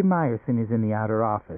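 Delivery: plain reading voice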